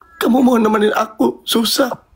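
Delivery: very high, tearful talking through crying. Asking the other speaker to stay through hard times, crying while talking. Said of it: "nggak usah nangis".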